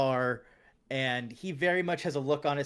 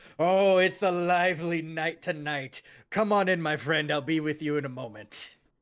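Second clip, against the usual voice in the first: hearty, loud, big booming barroom voice; 3 semitones higher, 4 dB louder than usual. A game master voices someone behind the bar greeting a player's character, big booming voice. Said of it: "a big booming voice from behind the bar, just big, loud".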